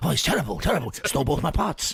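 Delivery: bad, failed attempt at a Welsh accent. Joking with Gareth in a mock complaint, bad Welsh accent. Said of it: "That was meant to be a Welsh accent".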